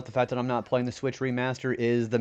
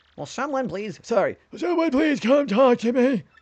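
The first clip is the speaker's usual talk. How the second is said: very high put-on old man voice; 11 semitones higher, 4 dB louder than usual. Speaker voices a character's line; old man voice. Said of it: "whenever I'm talking like that old man voice".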